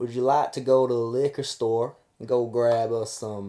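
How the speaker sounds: put-on drawling Southern accent. Mimicking how they would phrase a simple request, in a Southern drawl. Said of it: "they've got this the southern drawl".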